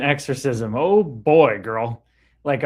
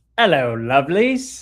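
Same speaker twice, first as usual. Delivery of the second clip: put-on English accent on "hello". Voice the greeting from Erica Lovely to the others, in a put-on English accent. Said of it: "says Erica Lovely with an English accent".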